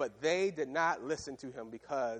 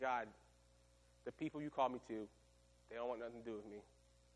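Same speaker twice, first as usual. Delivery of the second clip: put-on defeated tone, lower, quieter; 2 semitones lower, 9 dB quieter than usual. Speaker retelling Moses complaining to God, acting out defeated Moses. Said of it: "Moses is defeated".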